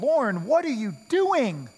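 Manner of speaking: acted frustrated, swooping call. Retelling what the guide said when the speaker stopped rowing to pray: mock-frustrated. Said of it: "with frustration in his voice".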